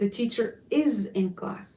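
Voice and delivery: emphasis landing squarely on is. Comparing english and arabic sentence stress for dramatic effect: stress on is. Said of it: "emphasizing the pronunciation of is in English".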